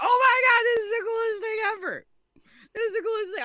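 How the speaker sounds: very high, loud, giddy, excited freaking out. Retelling a first reaction to a big announcement: imitating own excited freak-out. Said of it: "freaking out".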